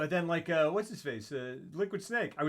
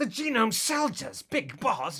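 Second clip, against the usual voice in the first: overdramatic put-on villain voice, higher and louder; 7 semitones higher, 4 dB louder than usual. Showing how Liquid Snake talks, Liquid Snake impression. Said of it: "a middling impression to, of that guy".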